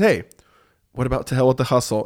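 sweet, tender, gentle little voice. Retelling a title suggestion while brainstorming on the couch: imitating Alyssa's sweet tender voice. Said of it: "little sweet, tender Alyssa in her voice says".

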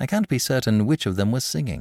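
plain reading voice

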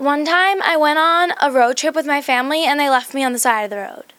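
spacey, flighty put-on character voice. Performing a line after the interviewer asks for a character's voice: Kat's voice. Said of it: "Can you say something in Kat's voice?".

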